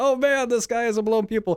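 high, freaking-out panicked exclamation.

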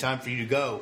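usual speaking voice

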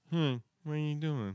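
put-on plugged-nose Midwestern accent. Imitating a character's plugged-nose Midwestern accent. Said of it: "his Midwestern accent is full plug nose".

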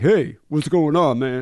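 loud, tough, streetwise street-guy voice. Retelling how an interviewee talks to the homies, imitating his street voice. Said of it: "he had like this totally different tone of voice".

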